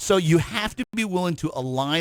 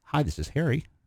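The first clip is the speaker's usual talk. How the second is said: gentle, kindly, soft and friendly voice; 2 semitones lower, 5 dB quieter than usual. Showing how introverts answer the phone, soft, friendly, smiling. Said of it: "Really soft, really friendly. You can kind of hear a smile".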